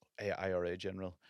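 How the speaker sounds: put-on whisper. Retelling what a father said at a funeral: imitating someone whispering. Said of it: "my dad was whispering to me".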